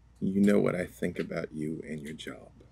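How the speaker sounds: soft, hushed half-whispered voice. Speaking in character, half-whispering back to her. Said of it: "I do whisper back to her".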